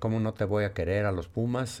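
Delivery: ordinary talk, nothing marked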